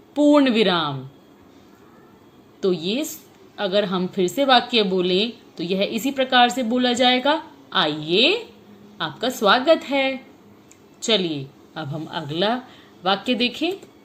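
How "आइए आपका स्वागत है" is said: brief short pause right after आइए. A teacher reads an example sentence to the children, with a pause after आइए. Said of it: "आइए के बाद मैं थोड़ी देर के लिए रुकी".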